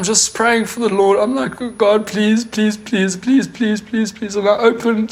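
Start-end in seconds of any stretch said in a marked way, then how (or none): 1.6-4.3 acted-out screaming, pleading delivery. Retelling the moment before finding Reva, the speaker re-enacts a screamed prayer. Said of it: "And I'm screaming".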